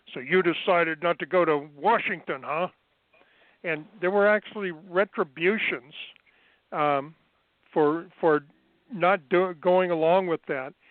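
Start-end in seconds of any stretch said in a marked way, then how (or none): 0.1-2.6 put-on, darkly sinister, menacing drill-sergeant taunting tone. Retelling what the senior drill sergeant said at check-in, in a mock-sinister voice. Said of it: "said in a sinister voice".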